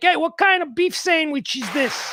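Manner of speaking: put-on Chicago accent, played ugly. Showing how someone sounds going down to Texas, Chicago accent. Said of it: "The Chicago accent is an extraordinarily ugly accent".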